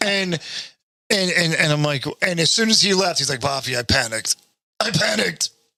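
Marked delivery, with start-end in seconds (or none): 3.4-5.5 put-on elderly man's voice. Retelling what a friend said after he left, imitating Ian's accent. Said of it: "what is that accent?".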